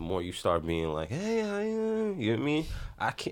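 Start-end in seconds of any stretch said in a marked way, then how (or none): 1.1-2.2 meek, feeble, very high voice. Demonstrating responding to someone weakly, in a weak voice. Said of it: "respond to them kind of weak".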